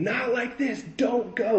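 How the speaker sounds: shrill, very high, desperate, pleading scream. Telling how a woman grabbed hold of them: retelling a woman's screaming. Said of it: "She's screaming".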